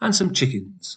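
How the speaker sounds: pitch falls on the word chickens. Teaching list intonation, voice going down on the last item: falling pitch on 'chickens'. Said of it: "the last one I say, my voice goes down".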